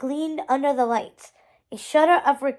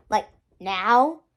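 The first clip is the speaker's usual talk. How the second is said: testy, snappish, snippy voice; 4 semitones lower than usual. Hector, when his brother doesn't respond right away, adds in a snippy voice. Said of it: "he added in a snippy voice".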